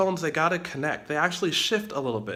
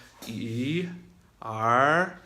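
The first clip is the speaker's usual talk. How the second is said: slow, question-like rising second tone on E and R; 4 semitones lower than usual. Teaching tones to learners in china, slow rising tone on each syllable. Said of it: "It's slow, it's rising, it's a bit of a question".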